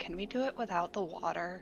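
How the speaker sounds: very quiet, hushed little half-whisper. Retelling how a boy stepped forward and asked her something: retelling a half-whisper. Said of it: "he like whispers to her a little".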